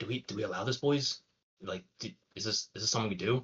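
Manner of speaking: loud, carrying stage whisper. Voicing villains huddled together, unsure how to whisper: loud whisper. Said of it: "as you hear them loudly whisper".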